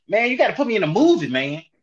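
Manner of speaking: loud, high-pitched, pushy, pestering, badgering tone. Acting out a party scene, asking a director for a movie part: DC Young Fly impression. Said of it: "that's a great D C Young Fly right there".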